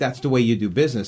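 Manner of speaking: plain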